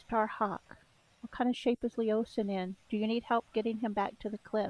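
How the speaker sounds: hushed half-whisper, under the breath. Casting a message spell to Starhawk in the game, half-whispering. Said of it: "I'm whispering".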